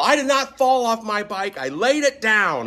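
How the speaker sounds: very high, slow, drawn-out hollering. Retelling being driven in an ambulance after a motorcycle crash: retelling a yell. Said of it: "And I just yell".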